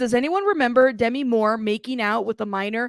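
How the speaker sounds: ordinary talk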